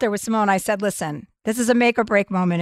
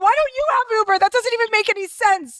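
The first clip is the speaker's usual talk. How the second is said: mock very high, shrill screaming; 12 semitones higher than usual. Retelling an argument in the kitchen: imitating screaming at someone. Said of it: "screaming at him in the kitchen".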